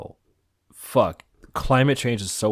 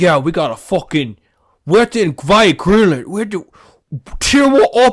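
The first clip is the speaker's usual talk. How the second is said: put-on British accent, higher and louder; 9 semitones higher, 10 dB louder than usual. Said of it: "this bastard British accent".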